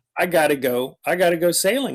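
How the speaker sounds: ordinary talk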